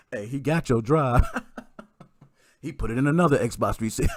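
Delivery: laughing, teasing, taunting voice.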